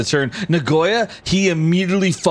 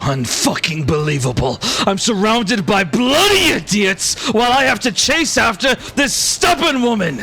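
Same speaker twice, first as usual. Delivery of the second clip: high, raised yell; 7 semitones higher than usual. Nagoya runs behind Vera, yelling. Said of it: "Nagoya yells as he runs".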